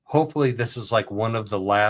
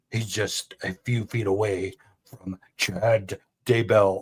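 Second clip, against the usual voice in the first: very slow, drawn-out, dramatic documentary narrator voice. Imitating a video narrator's line about a prison: imitating a dramatic narrator voice. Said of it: "It's so dramatic".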